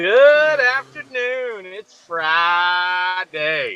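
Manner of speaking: slow, drawn-out, loud booming voice. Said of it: "Bro, why you so loud?".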